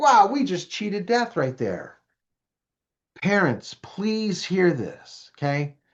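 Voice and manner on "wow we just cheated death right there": put-on fast, excited, thrilled teen voice. Acting out teens after a dangerous stunt: imitating an excited kid.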